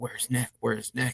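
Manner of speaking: soft, dark, ghostly voice calling out. Retelling a strange voice captured calling out at the house, imitating a dark voice. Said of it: "this really dark voice started calling".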